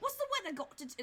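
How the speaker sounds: put-on British-sounding accent. Speaker voices a character, trying for brooklyn, in a brooklyn accent that stays british. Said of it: "that's still British".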